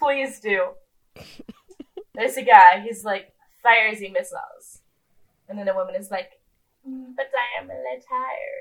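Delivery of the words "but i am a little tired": poor fake French accent, high and slow. Retelling a scene, the speaker quotes a woman: bad French accent. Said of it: "unlike myself".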